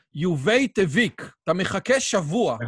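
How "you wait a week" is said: thick, heavy put-on Polish accent, pitched up. Retelling what a man in a story said, imitating heavy Polish accent. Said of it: "היה לו מבטא פולני מאוד קשה".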